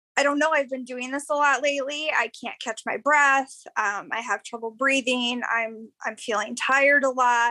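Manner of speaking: ordinary talk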